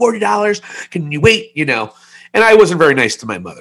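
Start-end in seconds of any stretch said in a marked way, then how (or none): 0.0-1.5 play-acted, unkind, overblown, high-pitched overreacting yell. Recounting overreacting to their mother after being woken, retelling a yell. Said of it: "I yelled at her".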